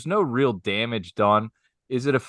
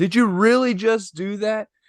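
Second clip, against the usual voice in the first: put-on woman's scream, higher pitched; 10 semitones higher than usual. Retelling how a woman at the golf green screamed at a guy: imitating a screaming woman. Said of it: "screams over to the guy".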